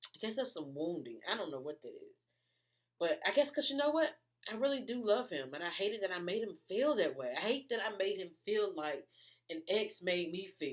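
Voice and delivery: tearful, emotional tone. Speaker talks about making someone they love feel hurt, tearing up. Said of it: "And I'm tearing up".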